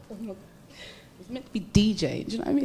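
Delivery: soft, rushed speech, crying through the words. A single mum recalling her past starts crying while talking. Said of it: "oh my God, why am I crying?".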